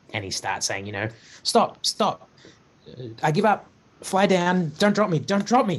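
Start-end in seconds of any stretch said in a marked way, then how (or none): 1.4-5.8 frantic, panicked, high, freaked-out pleading. Voicing a captured character carried high into the air: higher panicked voice. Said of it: "his voice goes a little higher as he's kinda, you know, kinda, like, obviously freaking out".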